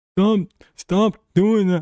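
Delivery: squeaky cartoon voice, way up high. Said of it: "my impersonation of what SpongeBob sounds like".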